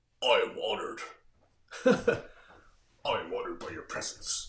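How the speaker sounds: very low, deep alien warrior voice. Demonstrating a greeting used in your videos, say it in a Klingon voice. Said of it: "in a Klingon voice".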